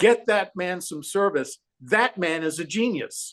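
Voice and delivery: mock, put-on loud calling out. Recalling a man pointing him out to a whole room, imitating someone yelling. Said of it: "he yelled out to the room".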